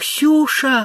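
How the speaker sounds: gentle, soft, very high-pitched calling. Udalov calls to Ksenia on seeing her face in the window, softly. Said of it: "мягко сказал Удалов".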